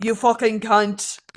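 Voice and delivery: put-on Irish accent. Speaker retelling being told to do his Irish accent: Irish accent. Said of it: "I feel like my Irish accent is good".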